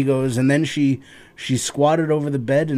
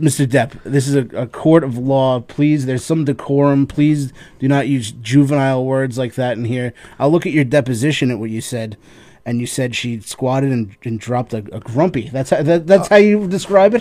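plain

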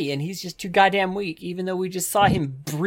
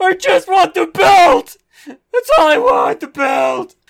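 bawling, very high and loud crying wail; 12 semitones higher, 11 dB louder than usual. Game narrator voicing a character who retreats to a corner, crying. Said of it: "he starts to cry".

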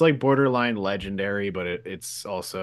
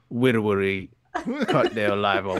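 put-on Louisiana accent. Retelling what a woman said, in a Louisiana accent. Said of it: "Louisiana for sure".

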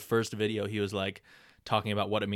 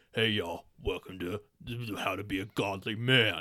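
imitated very low-pitched voice. Mimicking the man who does a video's introduction, imitating a very low voice. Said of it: "his voice is so low".

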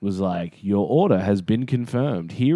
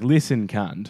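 ordinary talk, nothing marked

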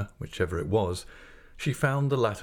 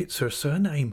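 faint, weak, slightly high voice; 6 semitones higher than usual. Reading a mother answering an indignant woman's question, faintly. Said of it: "said my mother faintly".

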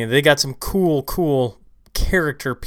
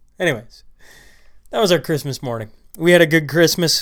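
plain

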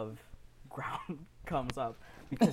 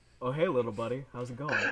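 put-on friendly big-guy voice. Voicing a summoned character arriving through a portal: voicing Kronk. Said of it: "Kronk comes through a light portal and he's like".

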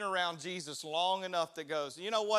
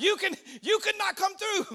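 put-on Peruvian accent, much higher and slower; 14 semitones higher, 7 dB louder than usual. Speaker retelling how locals stopped their bus, quoting them in a Peruvian accent. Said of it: "That's my accent, Peruvian".

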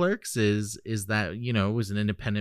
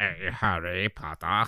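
creepy villain voice; 3 semitones lower than usual. Doing lines as the actor who played Snape: Snape impression. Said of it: "he played Snape".

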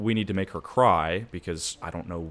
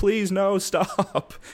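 mock very high, shrieking, screamed pleading voice; 12 semitones higher, 3 dB louder than usual. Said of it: "while she's still like".

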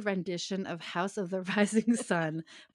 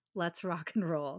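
usual speaking voice

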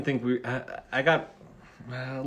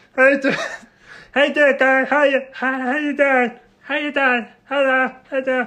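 mocking voice, higher and louder; 12 semitones higher, 7 dB louder than usual. Imitating the voice of a classmate named Michael Chen: imitating a classmate's voice. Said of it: "the voice was like".

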